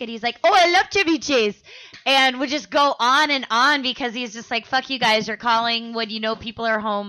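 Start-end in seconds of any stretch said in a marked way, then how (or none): 0.4-1.6 put-on loud, high Indian man's accent. Dad answers a caller during family dinner, doing an Indian man's voice. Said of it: "start doing an Indian man's voice".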